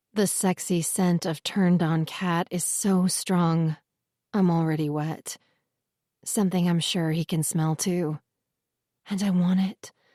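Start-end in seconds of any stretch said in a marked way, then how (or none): 9.1-9.9 whispering. Reading a romance scene aloud, a character adds a line: whispering. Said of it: "I add in a whisper".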